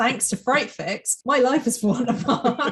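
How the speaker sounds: thick sarcastic tone. Joking about a reader blaming the podcast, in a put-on sarcastic tone. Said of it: "Like the really sarcastic".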